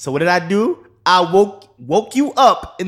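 yelling. Explaining to another speaker why he woke him up: yelling. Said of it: "Are you yelling at me?".

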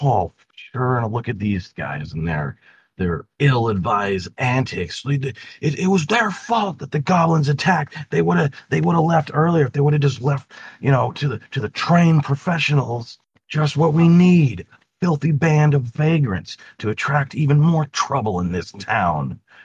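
put-on angry man's voice. Telling the players a scene, voicing the angry guy who sees them, angry man character. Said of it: "the angry guy".

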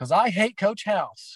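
shrill, very high, loud yell. Retelling a student's outburst at practice: imitating a girl yelling. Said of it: "she yelled it very loud".

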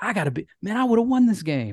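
put-on heated outburst. Retelling raging at a tv game show as a kid: imitating own past raging. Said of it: "raging at it and being like".

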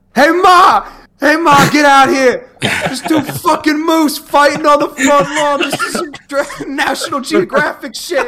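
put-on high-pitched New Jersey accent. Retelling a video of two moose fighting, the man filming calls to ma: new jersey accent. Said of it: "He sounds like he's from New Jersey".

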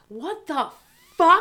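sudden, high-pitched, loud yelled outburst. Retelling how a temp at the office reacted to news: imitating someone yelling. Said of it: "drops her shit on the ground and just yells".

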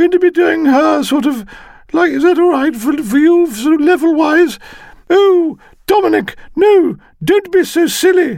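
loud, shouty woman's voice. Showing how the partner character will sound in the reading, shouty woman's voice. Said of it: "She's got quite a sort of shouty voice".

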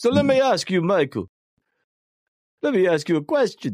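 Russian-accented mafia boss voice. Addressing another person on the show, in a Russian Godfather impression. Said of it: "why am I trying to sound like the fucking Godfather".

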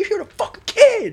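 very high, shrill, enraged scream. Describing a scene from a show, imitating a man screaming while slamming the table. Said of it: "He starts slamming the table".

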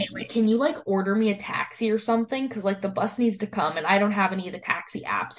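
ordinary talk, nothing marked

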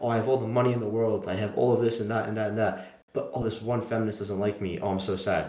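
ordinary talk, nothing marked

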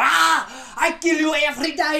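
mock, slow, high-pitched, drawn-out screaming yell. Picturing a fighter pacing the blue corner: imitating Hamzat screaming. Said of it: "walking around screaming".

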